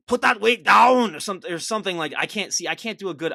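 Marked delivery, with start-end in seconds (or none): 0.1-1.1 very loud, rough, barked delivery. Answering a request to show how Arnold would sound: Arnold voice yelling. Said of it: "What would he sound like?".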